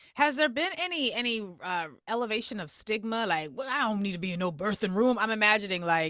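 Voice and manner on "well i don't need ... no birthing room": put-on old-fashioned, old-timey man voice. Imagining a man refusing the birthing room: put-on old-fashioned man voice. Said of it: "I don't know where that voice came from".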